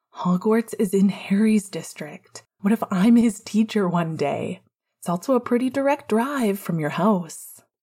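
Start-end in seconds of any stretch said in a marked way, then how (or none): none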